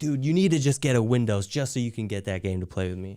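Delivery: ordinary talk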